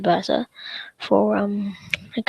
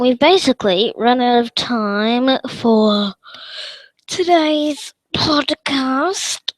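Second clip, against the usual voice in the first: slow, yawning delivery, words stretched out; 3 semitones higher than usual. Wrapping up a podcast, the host speaks while yawning. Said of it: "sorry, I'm yawning there".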